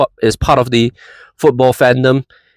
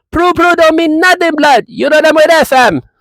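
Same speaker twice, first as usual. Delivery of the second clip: very high, put-on, fake Jamaican accent; 3 dB louder than usual. Trash-talking an opponent: jamaican accent. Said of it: "How's that Jamaican accent for me, blood?".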